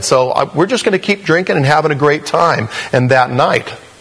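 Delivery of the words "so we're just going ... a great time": high, cocky, boastful-sounding voice. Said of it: "They were just saying".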